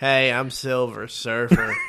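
put-on drawling actor voice. Joking about superhero roles: Matthew McConaughey voice. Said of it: "I just like doing Matthew McConaughey's voice".

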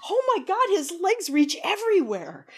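high-pitched amazed exclamation, gushing. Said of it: "And you just like".

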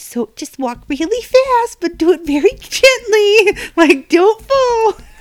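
very high, slow, sweet, cutesy mom voice. Retelling a field day game lady's instructions: imitating a cutesy mom. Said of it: "the really cutesy mom".

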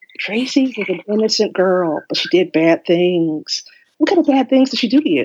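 in a whisper. Imagining being a ghost whispering to someone, whispering. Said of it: "I would whisper".

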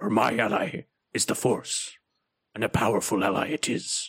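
deliberately bad, wise-sounding alien creature voice. Answering which Yoda quote represents them, in a terrible Yoda impression. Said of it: "I'm going to do terrible Yoda impressions".

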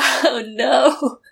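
speaking through tears, crying. Reacting to a show's finale, crying. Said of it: "the hardest I've ever cried on the podcast".

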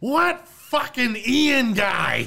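very high, very slow, drawn-out shout. Describing a favorite film scene, retelling the character's yell from his office. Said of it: "just yells".

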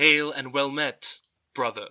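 mechanical robotic character voice. A player voices a robot character raising its arm in greeting, robot voice. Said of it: "Raises a robotic arm and is like".

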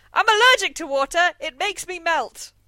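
high, loud, shrieking outcry. Retelling how the Wicked Witch of the West shouts before dying: imitating the witch shouting. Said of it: "'cause she shouts".

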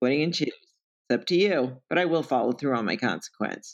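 normal talking voice

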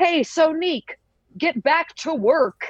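very high-pitched put-on American accent. Retelling the boss's line to the daydreaming diner worker, in an american accent. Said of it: "my favorite American accent".

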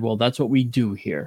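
very arrogant, haughty, superior put-on tone. Retelling what the Yale doctor said to a refusing patient, mock-arrogant tone. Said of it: "in a very arrogant tone".

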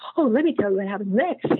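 acted-out, played-up excited eagerness. An author shows how they long to reveal what happens next, acting out excited eagerness. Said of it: "I get so excited about it".

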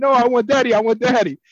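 put-on very high, loud, shrill child scream. Retelling a son waking beside his aunt: imitating a child screaming. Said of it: "he started screaming".

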